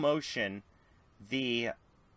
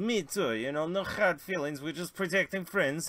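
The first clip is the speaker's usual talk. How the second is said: put-on Russian accent, higher pitch; 5 semitones higher than usual. Telling a story where the russian guy stands up to speak, voicing the russian guy. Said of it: "the Russian guy stands up and goes".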